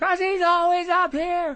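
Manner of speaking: put-on frantic announcer voice. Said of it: "at this fever pitch all the time".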